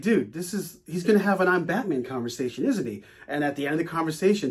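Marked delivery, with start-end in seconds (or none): none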